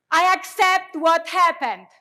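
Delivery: very loud, high, emphatic, full-conviction delivery. Leading a standing audience in a spoken affirmation, emphatic, full conviction. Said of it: "say it like you really mean it".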